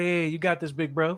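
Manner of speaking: play-acted, politely condescending, falsely encouraging tone. Retelling how a friend talks to them: imitating Marcus's patronizing tone. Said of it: "are you patronizing me?".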